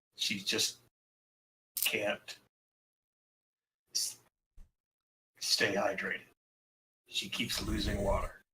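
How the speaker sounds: hushed, barely-there, very quiet nervous murmur. Voicing a nervous character confiding a worry: speaking very quietly. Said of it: "he just kind of very quietly says".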